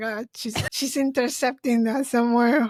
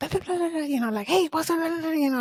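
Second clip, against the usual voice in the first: super fast, rapid-fire, pitched-up, rattled-off babbling chatter; 6 semitones higher than usual. Demonstrating the voicemail sent to a friend who listens sped up, super fast talking. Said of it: "like super fast".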